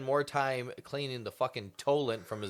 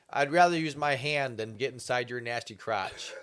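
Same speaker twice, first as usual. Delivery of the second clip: ordinary talk, nothing marked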